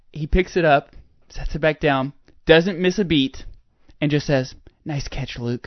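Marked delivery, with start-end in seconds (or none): 4.8-5.7 very hushed, unfazed whisper, barely audible. Retelling what he said after catching what he dropped, retelling a whisper. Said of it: "He whispers".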